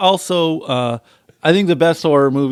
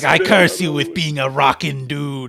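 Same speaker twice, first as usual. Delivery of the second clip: acted witch's voice. Acting out a witch who curses someone she was spat on by: acting out a witch's curse. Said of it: "And she's like".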